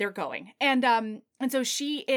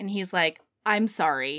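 ordinary talk

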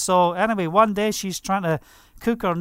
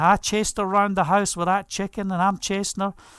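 ordinary talk, nothing marked

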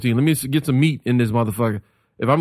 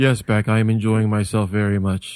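low, flat, unvaried deadpan drone; 4 semitones lower than usual. Acting out an intentional reply to Beck: monotone. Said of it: "I would intentionally say everything monotone in there".

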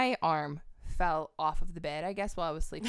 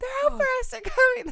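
mock shrill scream, very high pitch, rattled off fast; 5 dB louder than usual. Retelling waking up in a car while camping; retelling a scream on waking. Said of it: "I woke up screaming".

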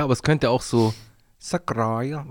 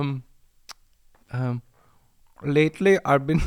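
slow, put-on fake Indian accent; 2 semitones higher than usual. Asked to imitate an Indian accent, the speaker tries a fake Indian accent. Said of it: "Mach mal indischen Akzent nach".

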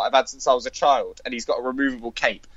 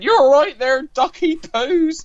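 put-on very high, loud, shrill West Country accent; 5 dB louder than usual. Recalling Count Duckula's aunt, the speaker imitates her West Country accent. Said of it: "who had a brilliant West Country accent".

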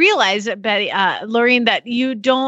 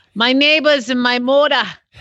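r dropped from "neighbors" and "moda"; 3 semitones higher, 3 dB louder than usual. Copying how Lorene talks, saying the words with Lorene's dropped R's. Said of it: "There's no R sound in how she talks".

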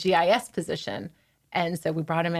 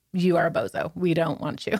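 ordinary talk

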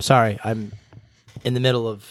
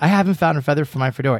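normal talking voice

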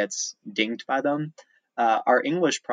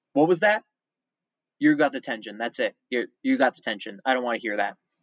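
mock harsh, aggressive, angry scolding outburst. Retelling how he reacted after a kid laughed nervously: mock-aggressive, in a terrible mood. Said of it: "stomped in really aggressive in a terrible mood".

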